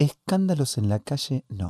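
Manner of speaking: mock gentle, soft, menacing mafioso-style motherly tone. Speaker retells what their mother said about scenes in the street: imitating mom's soft mafioso tone. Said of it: "era como cuasi mafioso de madre, que te lo dice con suavidad".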